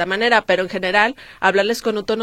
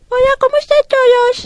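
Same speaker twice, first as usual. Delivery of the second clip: very high, loud, cutesy little pet voice; 7 dB louder than usual. Asked to do their pet dog's voice, the speaker does Ringo's dog voice. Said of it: "haz voz de tu perrito".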